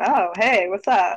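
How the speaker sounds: slow, flirtatious woman's voice. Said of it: "fans herself a little bit".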